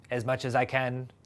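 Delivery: put-on Finnish accent. Speaker quotes a man's answer in a Finnish sauna hot tub, Finnish accent. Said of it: "That's my Finnish accent".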